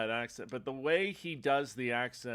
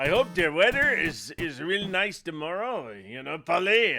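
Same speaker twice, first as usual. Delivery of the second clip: put-on Quebec French-Canadian accent in English; 4 semitones higher, 7 dB louder than usual. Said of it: "a Quebecer".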